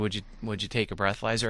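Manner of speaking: plain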